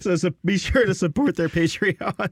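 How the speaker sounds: voice cracking. A podcast host speaking to listeners: voice cracking. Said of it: "my voice just broke there".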